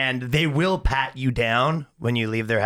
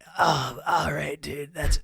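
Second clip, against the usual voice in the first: rough, creaky male voice from the throat; 4 semitones higher than usual. Doing an impression of Steve-O after praising him: Steve-O impression. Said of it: "Steve-O rules, dude".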